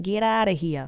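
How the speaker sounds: low, put-on Boston accent, attempted then dropped. Trying out how a person in Boston would say it, Boston accent. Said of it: "how would a, a person in Boston say get out".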